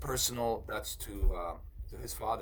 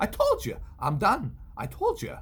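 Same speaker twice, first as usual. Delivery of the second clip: very high, loud, swooping, pitch-adjusted put-on voice; 12 semitones higher, 8 dB louder than usual. Explaining that impressions take practice, demonstrate a Christopher Walken impression, adjusted pitch. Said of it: "same thing with the Christopher Walken. You have to adjust that pitch".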